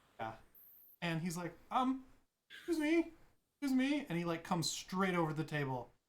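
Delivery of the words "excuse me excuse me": put-on jittery, nervous older man voice, very high pitched. Voicing an older gentleman who walks up to the table: nervous older gentleman. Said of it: "he looks like a very nervous person".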